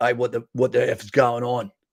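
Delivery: rough, gravelly, confrontational voice. Describing someone who walks out to confront trouble two doors up, in a gravelly voice. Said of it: "in a gravelly voice".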